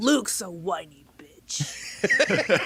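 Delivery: pitch dropped low, each word dragged out. Repeating an insult after being asked to say it like the Emperor: Emperor voice. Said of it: "say that like the Emperor".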